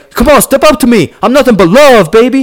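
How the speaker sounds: loud, very high, flirtatious call. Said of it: "he's all like".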